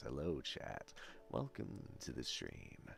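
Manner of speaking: soft, very quiet whispered ASMR voice. Showing off vocal range on stream, greeting chat in an ASMR voice. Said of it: "The A S M R voice".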